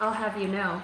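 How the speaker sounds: normal talking voice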